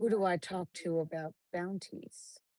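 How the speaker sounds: intense, close whisper. In a tabletop game, a player's character gets close to a man and whispers. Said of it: "I'm going to whisper".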